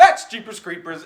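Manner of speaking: loud, slow, high-pitched, freaked-out shriek.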